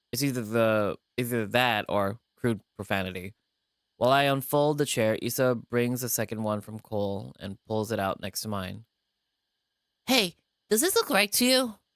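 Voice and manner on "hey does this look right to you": squeaky-high, scratchy youthful voice. Voicing a character's line in a narrated scene, scratchy young yordle voice. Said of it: "my yordle voice or or like s- scratchy young voice".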